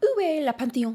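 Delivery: high-pitched, showy French accent.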